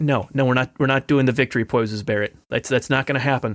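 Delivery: ordinary delivery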